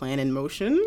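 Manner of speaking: normal talking voice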